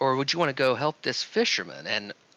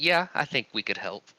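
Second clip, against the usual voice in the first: smug, self-satisfied tone. Speaking in character in the game, smug. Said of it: "kind of smugly like".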